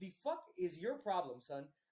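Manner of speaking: plain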